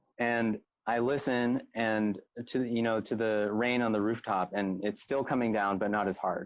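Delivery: ordinary delivery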